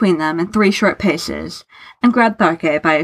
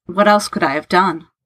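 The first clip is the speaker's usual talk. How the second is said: ordinary delivery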